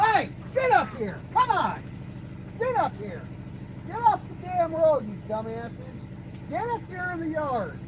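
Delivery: very high, swooping yell. Calling goats off the road into the yard: yelling at goats. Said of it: "I gotta go yell at goats".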